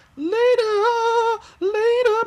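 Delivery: voice cracking, very high-pitched and very loud. Saying goodbye at the end of a meeting, cracked voice. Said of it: "My voice is cracked".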